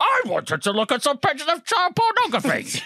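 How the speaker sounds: very high, loud, silly, swooping put-on voice. Reading out an article's opening line in a stupid voice: Quinn voice. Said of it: "He's gone for a Quinn voice".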